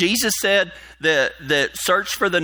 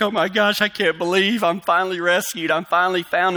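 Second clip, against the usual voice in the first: mock tearful sobbing, sounding relieved. Retelling a castaway's words on being rescued after twenty years, imitating someone crying. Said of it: "he's just crying".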